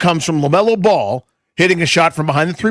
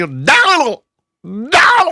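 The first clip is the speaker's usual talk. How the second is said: put-on high, swooping, screamed announcer-style call; 7 semitones higher than usual. Mimicking how he screamed a name during the touchdown call, imitating a scream. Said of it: "he screamed it".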